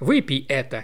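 usual speaking voice

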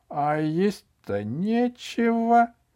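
cheerful, light tone. In a read story, the grandmother answers a question: cheerfully. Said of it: "весело сказала бабушка".

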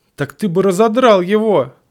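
meek, timid voice breaking into a shout. A timid voice argues with a domineering one, shouting. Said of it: "закричал робкий голос".

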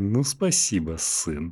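clenched-jaw, held back, through gritted teeth. Retelling how a father thanks his son, imitating speaking through gritted teeth. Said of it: "сквозь зубы такой".

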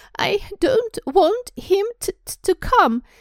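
very high bawling, wailing fake-sob yell. Dudley, hugged by his mother, yells between fake sobs. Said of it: "Dadley yelled between huge pretend sobs".

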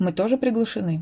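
ordinary delivery

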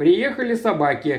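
ordinary delivery

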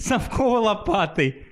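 acted chuckling through words. Retelling how a man reacted to the speaker's quip, imitating him laughing. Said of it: "Ха-ха-ха-ха!".

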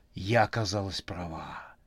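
ordinary talk

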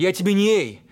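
ordinary talk

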